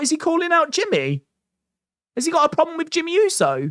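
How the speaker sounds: high, fast, rising surprised voice.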